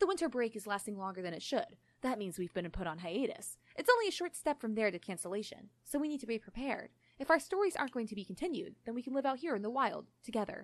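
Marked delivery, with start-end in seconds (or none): none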